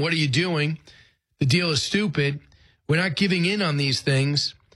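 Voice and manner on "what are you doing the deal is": usual speaking voice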